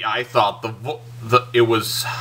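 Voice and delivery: halting, stuttering, stumbling over words. Reviewing an animated film and tripping over the words, stuttering. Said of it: "I'm stuttering today".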